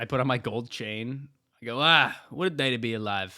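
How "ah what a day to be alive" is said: loud, played-up, put-on Italian accent. Pretending to be Italian, waking up to a new day: acting as an Italian plumber. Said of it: "You can imagine being Italian".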